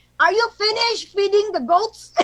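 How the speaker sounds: pitched way up, loud, carrying call. Re-enacting calling to his brother on another mountain, retelling a loud call. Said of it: "you need to have a loud voice".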